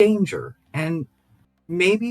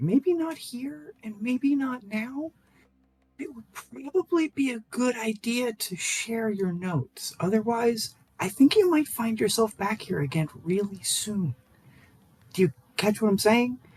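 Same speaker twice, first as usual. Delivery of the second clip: quiet, hushed, pointed tone; 6 dB quieter than usual. Speaking to an uncomfortable man, in a lowered voice. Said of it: "I sort of lower my voice a little bit".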